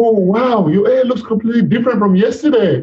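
high, amazed exclamation.

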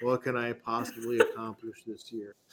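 soft, gloomy, mopey sad-sack donkey voice. Teasing the other speaker by repeating their words, in a mock-sad Eeyore voice. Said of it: "Little Eeyore action".

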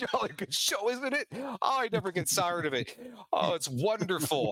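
chuckling throughout. Voicing a boy on a rock who is rolling with laughter: laughing while talking in character. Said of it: "he is just rolling with laughter".

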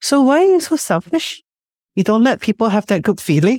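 mock cheeky teasing. Retelling what a husband once said about asking for help: imitating a cheeky remark. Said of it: "he said in a very cheeky way".

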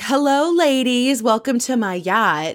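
put-on happy, cheerful, welcoming tone. Retelling a reality show scene, greeting guests on a yacht: imitating Ramona's cheerful greeting. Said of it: "She's in a great mood".

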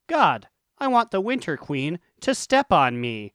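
ordinary talk, nothing marked

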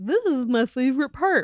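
heavy, dripping, pointed sarcasm. Retelling a line heard in the episode: imitating McNeil's sarcastic tone. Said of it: "really sarcastically".

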